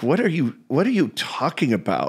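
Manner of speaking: acted-out condescending, swooping, dismissive tone. Retelling how a guest answered interview questions: imitating a condescending answer. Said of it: "answered them so condescendingly and like".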